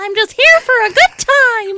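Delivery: very high, loud, squeaky cartoon mouse voice. Asked what the animal in the pictures would sound like, giving it a high-pitched put-on voice. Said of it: "You sound like Mickey Mouse".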